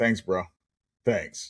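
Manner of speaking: mock-sarcastic delivery. Retelling own reply to a therapist, imitating a sarcastic reply. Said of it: "and with the sarcastic remark".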